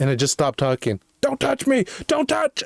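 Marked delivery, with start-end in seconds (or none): 1.2-2.6 very high-pitched, shrill, all-out screaming. Retelling screaming for help near a baseball field: retelling a scream for help. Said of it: "I was screaming as, like, the loudest possible".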